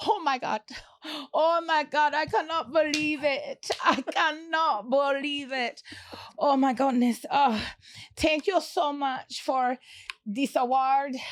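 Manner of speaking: Jamaican-accented speech. Acting out an Oscars acceptance speech on request, in a Jamaican accent. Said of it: "Jamaican accent".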